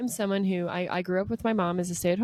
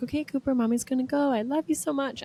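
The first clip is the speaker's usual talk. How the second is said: high-pitched, tearful, sobbing voice; 6 semitones higher than usual. Retelling saying goodbye to her son at daycare: imitating own sobbing goodbye. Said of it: "And I am sobbing".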